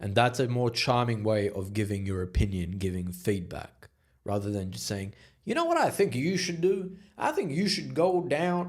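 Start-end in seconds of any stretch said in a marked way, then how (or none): 5.4-8.7 very high cowboy voice, swinging up and down. Giving an example of unsolicited advice, the speaker sounds like a cowboy. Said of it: "I don't know why I sound like a cowboy".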